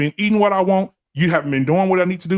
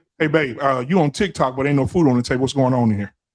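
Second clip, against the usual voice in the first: put-on blunt, stoic, emotionless man voice, lower; 6 semitones lower than usual. Acting out how a blunt stoic man talks to Chrissy: acting out a blunt stoic man. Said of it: "so your man come home and say".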